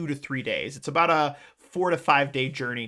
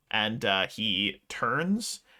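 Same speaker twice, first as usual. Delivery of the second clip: ordinary delivery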